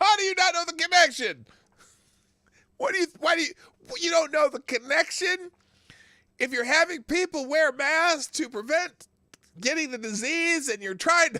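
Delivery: very high-pitched, full-on loud yelling. Speaker watching a man deflect a question argues back at him; yelling. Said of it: "I'm sorry, I'm yelling".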